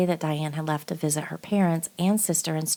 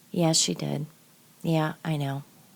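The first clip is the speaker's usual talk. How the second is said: put-on flat, emotionless monotone. Narrating court testimony, quoting a man's cold reply, retelling a monotone reply. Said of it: "in a monotone voice".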